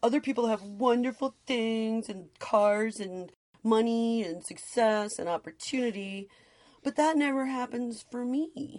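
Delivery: whiny, complaining, self-pitying voice. Voicing what a scarcity mindset would say, mock-whiny complaining voice. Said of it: "I said that in a whiny voice".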